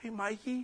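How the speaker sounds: very high, hushed and soft voice. Recalling walking in on his dad, the speaker imitates his dad's soft voice. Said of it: "my dad's got this real soft voice right now".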